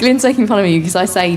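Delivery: ordinary talk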